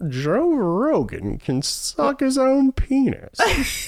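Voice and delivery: put-on very high, prim, disapproving old lady voice. Sharing news with the other hosts, in a disapproving old lady voice. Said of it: "It's like an old lady".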